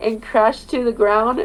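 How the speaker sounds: ordinary delivery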